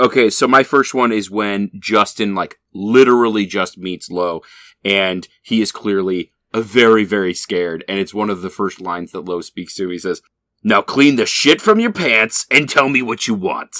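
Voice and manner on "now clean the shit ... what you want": put-on older, tough, swaggering, barking bully voice. Recapping a scene where Lo first speaks to a scared newcomer, in a Lo impression. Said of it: "my Lo impression is, like, dangerously close to Biff".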